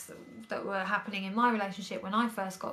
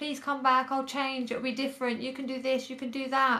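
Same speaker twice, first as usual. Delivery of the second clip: higher, tearful, crying, pleading voice. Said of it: "I've had him on the phone crying, pleading, begging".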